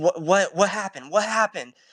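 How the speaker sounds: put-on anxious, worried voice, words repeated. Retelling a dad's reaction to his son freaking out: imitating worried dad. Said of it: "He's worried about his money".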